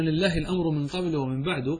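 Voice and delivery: ordinary delivery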